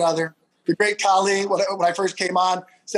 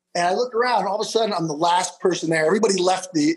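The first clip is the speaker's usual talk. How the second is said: normal talking voice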